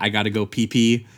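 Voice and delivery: mocking, put-on delivery. Recapping a show where one character mocks another, mockingly quoting the line. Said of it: "to mockingly do the line".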